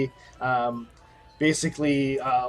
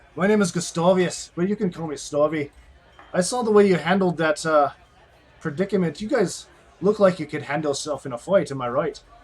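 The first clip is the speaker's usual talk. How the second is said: put-on aged dwarf character voice, elderly sounding; 3 semitones higher than usual. Voicing Gustavius introducing himself to the group: Gustavius, aged dwarf voice. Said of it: "he introduces himself as".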